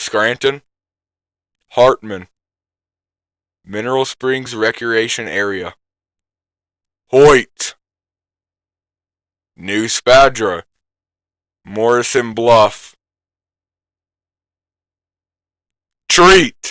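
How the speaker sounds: slow, unhurried, careful, deliberate reading. Speaker reads a list of place names aloud, reading slowly. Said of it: "I'm gonna read it slowly".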